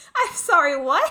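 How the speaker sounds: loud, cracking voice, stunned disbelief. Reacting in stunned disbelief to a tombstone inscription, voice cracking. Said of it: "My voice just cracked while saying that".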